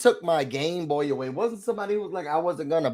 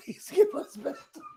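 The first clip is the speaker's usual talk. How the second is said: whispered, breathy, cracking up while speaking; 6 dB quieter than usual. Trying to act out a mock plea, laughing while talking. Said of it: "I can't say it with a straight face".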